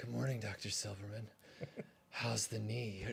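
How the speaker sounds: dropped low, softly rasped voice. Doing a husky Linda Hamilton line that sounds like Dirty Harry: husky Linda Hamilton impression, sounds like Dirty Harry. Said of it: "I sound more like Dirty Harry".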